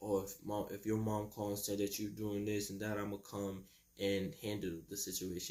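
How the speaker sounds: normal talking voice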